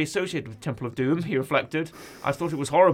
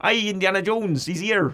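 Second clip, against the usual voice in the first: put-on rustic Cornwall farmer voice; 5 semitones higher, 3 dB louder than usual. Doing a farmer for an Indiana Jones adventure set in Cornwall, farmer accent. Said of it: "Is that your farmer?".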